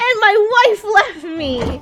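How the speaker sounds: slow drawn-out complaining. Retelling what a game character said: imitating a game character. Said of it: "that's still the guy that was like".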